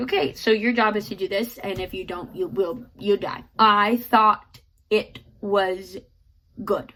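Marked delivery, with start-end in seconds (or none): none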